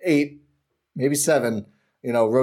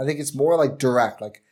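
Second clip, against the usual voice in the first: ordinary delivery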